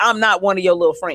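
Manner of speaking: normal talking voice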